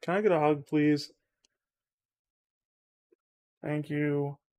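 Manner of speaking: quiet, subdued, sad, downcast little voice. Feeling sad, asking the other person for a hug, sad and quiet. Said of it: "I'm just getting quiet".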